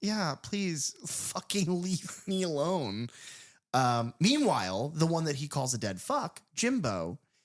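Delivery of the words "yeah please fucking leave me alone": put-on, high, horrified, repulsed tone. Retelling a movie scene where a character rejects a peer: imitating someone horrifically turned off. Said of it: "horrifically turned off".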